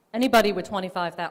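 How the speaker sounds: very loud, excessive shouting. Presenting a vehicle recall tool, shouting into the microphone. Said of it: "I'm shouting into this".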